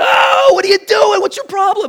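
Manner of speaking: very high, shrill, loud yell. Retelling yelling at a man who was beating his dog, retelling a yell. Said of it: "So I start yelling at the guy".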